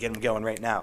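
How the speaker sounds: plain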